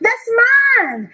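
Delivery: very high, ringing shout, flung outward. A poet calls after a lover who almost ran off with everything, shouting. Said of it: "I'm shouting".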